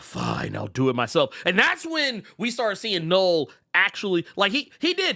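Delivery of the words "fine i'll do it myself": grumbling, deep, rough, big-screen supervillain voice. Recounting a comic ending and quoting Thanos: Thanos impression. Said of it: "that Thanos joint where he's like".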